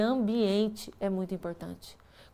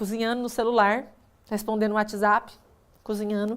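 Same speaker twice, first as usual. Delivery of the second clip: ordinary talk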